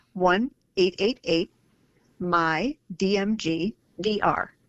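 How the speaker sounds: slow, deliberately spaced-out, careful delivery.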